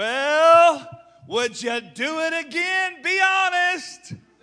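very loud, very high, drawn-out rising well. Retelling what the speaker's wife asked on the way to church, in a very loud voice. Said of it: "She said in a very loud voice".

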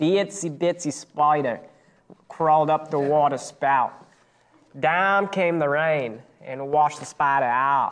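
attempted Boston accent. Player who drew Boston tries doing the accent, attempted Boston accent. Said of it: "Boston accent".

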